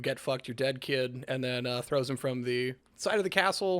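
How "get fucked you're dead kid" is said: ordinary talk, nothing marked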